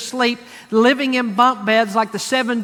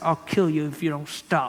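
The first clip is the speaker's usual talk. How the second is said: words forced out through clenched teeth; 7 semitones lower, 7 dB quieter than usual. Showing what the rest of us do, speaking through clenched teeth. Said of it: "You close your teeth like this and say".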